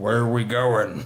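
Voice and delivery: put-on croaky cartoon bullfrog voice. Repeating the woman's question: Disney bullfrog voice. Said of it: "that's the voice of a bullfrog in a Disney movie".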